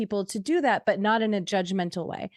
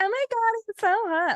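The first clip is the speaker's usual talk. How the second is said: very high, gushing, ditzy airhead voice; 13 semitones higher than usual. Describing how women react to a tanned bodybuilder type, imitating a bimbo. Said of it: "the bimbos would be like".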